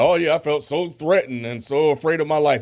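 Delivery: high, dripping sarcasm with acted, feigned fear. Retelling what a guy said at an event: imitating sarcastic speech. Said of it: "He was being sarcastic".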